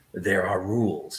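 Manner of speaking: very deep, low, rumbling, vibrating, subwoofer-like voice. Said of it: "in a very low vibrational voice".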